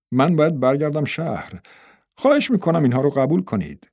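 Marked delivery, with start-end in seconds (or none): none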